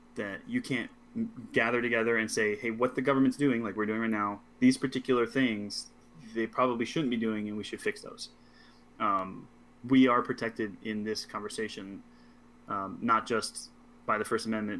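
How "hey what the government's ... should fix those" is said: normal talking voice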